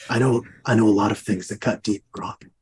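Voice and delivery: put-on low, threatening, menacing accented voice. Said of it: "this is my threatening accent".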